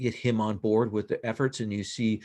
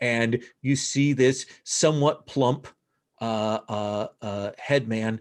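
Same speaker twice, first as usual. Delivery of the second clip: ordinary delivery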